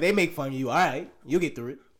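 usual speaking voice

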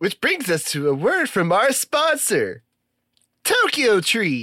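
annoying, swooping announcer voice. Podcast host leads into the sponsor read in the annoying voice. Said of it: "You're doing the annoying voice".

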